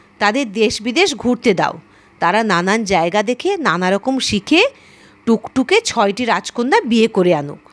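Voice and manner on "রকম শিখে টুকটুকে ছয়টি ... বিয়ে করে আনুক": ordinary delivery, nothing marked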